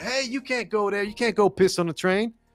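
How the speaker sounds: acted-out yelling, pitched way up. Recounting how a man on the train was yelled at, retelling a yell. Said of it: "Yelling at him like".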